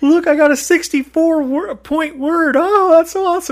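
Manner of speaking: put-on very high, excited, drawn-out gloating. Retelling a word game, the speaker imitates a woman excitedly gloating over her score.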